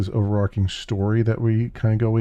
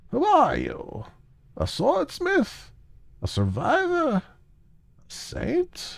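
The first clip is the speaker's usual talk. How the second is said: put-on very high, rasping old woman's raven-like croak; 3 dB quieter than usual. Reading a game's text aloud, voicing the old woman's questions in a rasping raven voice. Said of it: "she has the rasping voice of a raven".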